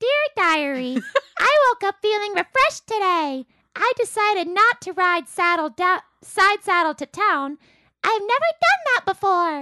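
high-pitched puppet monster voice. Asked to read number five aloud, the speaker reads a diary entry: Elmo voice. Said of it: "read number five in the voice of Elmo".

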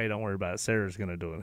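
soft, low, quiet, hushed, reassuring tone.

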